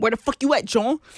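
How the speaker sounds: imitated Philadelphia accent. Retelling what an ex from philly said: imitating a philly accent. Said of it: "Philly got the worst accent by far".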